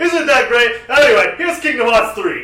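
high, loud mock presenter voice with a little Italian.

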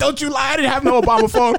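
screaming, very high-pitched. Telling the story of a man who suddenly started screaming, retelling someone screaming. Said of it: "then he started screaming like".

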